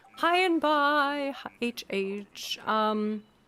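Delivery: ordinary talk, nothing marked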